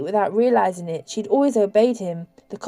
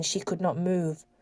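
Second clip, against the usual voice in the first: ordinary delivery, nothing marked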